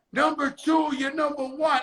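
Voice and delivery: imitated scream. Retelling cheering at a baseball game: retelling screaming like a groupie. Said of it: "I'm screaming like a groupie".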